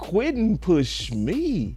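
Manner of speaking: stunned, disbelieving, shocked outburst. Retelling what a teammate said about Quentin: imitating someone sounding shocked. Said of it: "he said it like he was shocked".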